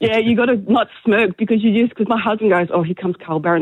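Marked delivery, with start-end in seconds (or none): none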